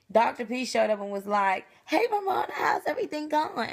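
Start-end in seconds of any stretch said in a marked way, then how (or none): 1.8-3.7 acted bright, high-pitched voice. Retelling the doctor greeting after surgery: imitating a chipper greeting. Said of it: "he's all, like, all chipper and stuff".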